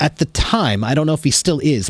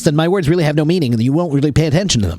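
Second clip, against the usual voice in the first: hurried, run-together, fast, rushed talk. Teaching how to speak like an actor, demonstrating fast speech. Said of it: "The faster you speak".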